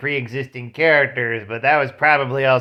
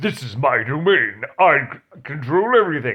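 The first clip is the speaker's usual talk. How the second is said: deliberately poor cartoon character voice. Speaker recapping the latest cartoon episode, quoting the villain in a Trigon voice. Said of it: "that's a horrible Trigon voice".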